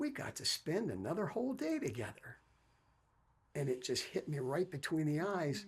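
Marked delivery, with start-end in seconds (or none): 0.0-2.4 mock most upbeat, bright, cheerful sing-song lilt. Retelling a father's words at the hospital bedside: imitating an upbeat, cheerful voice. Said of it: "in the most upbeat, cheerful voice".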